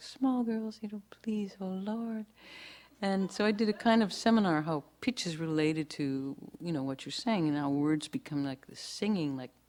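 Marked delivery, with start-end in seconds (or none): 0.0-2.3 voices risen way up, high and pleading. Retelling how the nuns prayed: imitating nuns praying in high voice. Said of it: "rose way up".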